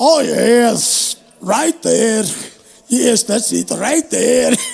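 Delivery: put-on Scottish woman voice. Reenacting a funny bit someone does, in a Scottish woman voice. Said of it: "That one he does about the Scottish chick".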